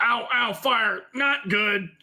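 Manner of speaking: high, very slow, drawn-out mechanical robot voice. Voicing a duergar hit by a flaming sphere: robot voice. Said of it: "I don't know why he's a robot".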